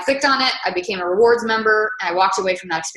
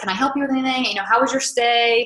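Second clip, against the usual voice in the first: put-on friendly customer-service voice, higher; 3 semitones higher than usual. Retelling what the hotel clerk said at checkout: imitating friendly customer service voice. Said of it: "super customer service friendly".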